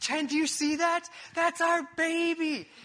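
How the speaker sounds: high scream while sobbing. Retelling to listeners the moment of first seeing the baby, retelling screaming and crying. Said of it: "I started screaming, crying".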